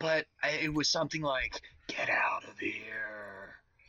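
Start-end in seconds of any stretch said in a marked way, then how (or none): 1.9-3.6 very slow, hushed, eerie whisper with stretched words. Retelling what a voice in the fog said: imitating a creepy whisper. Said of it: "this creepy voice whispering to me".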